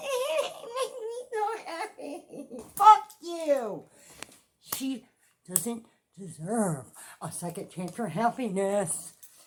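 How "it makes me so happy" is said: much higher, slow fake-crying whine. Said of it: "the kind that make your voice get high pitched".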